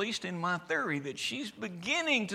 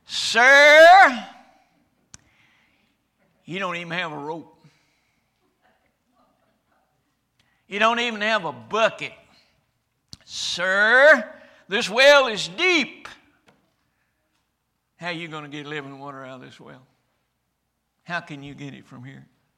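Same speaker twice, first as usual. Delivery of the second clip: very loud, scornful, mocking, sarcastic delivery; 15 dB louder than usual. Preacher acts out the woman at the well answering him, acting out a sarcastic reply. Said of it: "very sarcastically".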